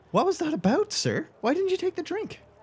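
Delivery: high-pitched squeaky character voice.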